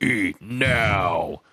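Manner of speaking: lumbering, drawn-out monster voice. Telling the story, the speaker quotes the one who smashed the door, in monster voice. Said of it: "in his customary monster voice".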